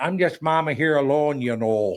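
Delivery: put-on thick Minnesota accent. Imitating people answering a cash call phone prank: big minnesota accent. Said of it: "They all got the big Minnesota accent".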